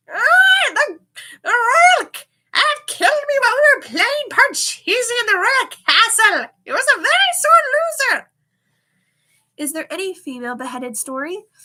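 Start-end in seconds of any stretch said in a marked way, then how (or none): 0.1-8.3 very high, very loud crow voice. Storyteller voices the crow's ghost explaining how it died: crow voice. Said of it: "I will say it in the crow voice".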